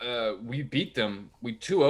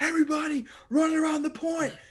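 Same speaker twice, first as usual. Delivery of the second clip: mock, shrill, very high screaming shout. Retelling screaming at people from the center of the road: retelling own screaming. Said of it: "It's just me screaming in the center".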